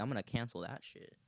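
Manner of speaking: normal talking voice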